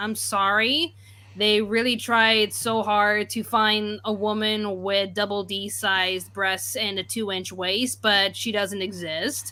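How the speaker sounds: ordinary talk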